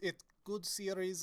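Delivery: crude, bad, fake Russian accent. Opening a video about the Metro series, in a bad put-on Russian accent. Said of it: "I stop shitty Russian accent now".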